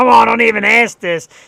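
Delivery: loud, creaky, annoyed mock yell.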